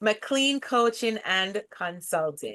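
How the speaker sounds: slow, every word clearly enunciated. Repeating a company name after being asked to, slow and clear. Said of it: "I want them to hear it".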